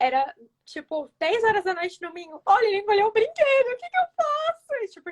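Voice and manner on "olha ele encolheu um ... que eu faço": mock very high, tearful, desperate crying voice. Speaker retells calling the vet late on a Sunday, imitating her past crying.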